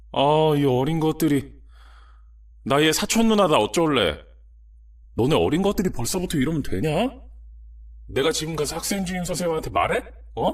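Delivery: shrill scolding voice.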